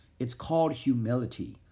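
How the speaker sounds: plain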